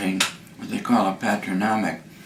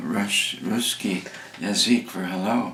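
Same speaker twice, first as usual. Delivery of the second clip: plain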